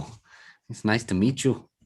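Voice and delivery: slow, drawn-out cartoon Canadian accent. Joking about a Canadian friend, greeting him: Speedy Gonzalez in Canada voice. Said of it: "That sounded like Speedy Gonzalez living in Canada".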